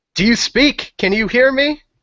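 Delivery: very high, demanding, insistent yell. Yelling at a hissing creature that is slashing the character: yelling at a creature. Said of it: "I'm going to yell at him".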